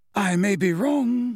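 pleasantly spoken. A speaker interjects at a trial, pleasantly. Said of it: "said Dumbledore pleasantly".

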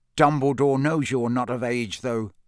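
ordinary delivery

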